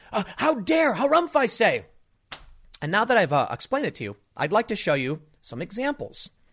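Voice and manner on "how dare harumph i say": high-pitched, huffy mock outrage. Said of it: "are freaking out, going".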